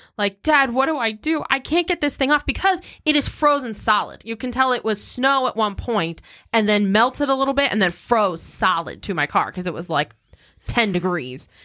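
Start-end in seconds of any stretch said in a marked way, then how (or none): 0.4-4.2 play-acted, high, tearful sobbing. Speaker retells a phone call to their dad, acting out past sobbing. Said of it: "I am bawling my eyes out".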